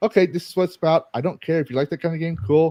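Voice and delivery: mock sarcastic military-guy voice. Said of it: "being a snarky, typical military guy".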